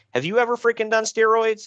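acted-out, very high angry voice, climbing in pitch. Retelling how a man being laughed at got pissed, imitating an angry man. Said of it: "And he's getting pissed".

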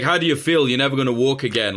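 mock mocking laughter while talking. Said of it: "laughing his head off".

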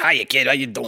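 tough-guy New York construction worker accent. Voicing the daughter's toy rabbit: new york construction worker voice. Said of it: "the voice of a New York construction worker".

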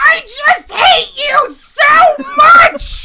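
very high, very loud, slow, shrill, drawn-out villain shriek. Retelling a cartoon villain's line at the end of every bit: screaming Cobra Commander impression. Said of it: "I just hear that screaming".

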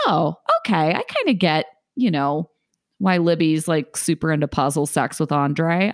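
normal talking voice

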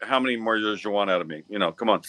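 normal talking voice

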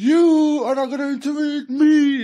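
very high panicky freak-out. Retelling what a man said to him, imitating someone freaking out. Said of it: "freaking out and shit".

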